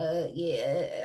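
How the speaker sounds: imitated stuttering, man's voice. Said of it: "stuttering and shit".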